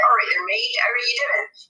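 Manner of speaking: quick West Country accent. Show how a greeting differs from the American version, in a West Country accent. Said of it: "in the West Country, they'd be like".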